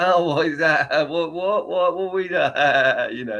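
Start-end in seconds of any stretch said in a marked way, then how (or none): 0.0-2.3 fake, puzzled, protesting voice. Ranting about a company, imitating how its people act when told off, mock-confused. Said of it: "some of them will act all like".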